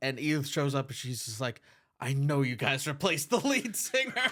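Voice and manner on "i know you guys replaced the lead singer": mock, pointed, accusing tone. Recapping a show, speaker retells a character confronting a band, in a mock-accusing tone. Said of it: "she says it like so accusing".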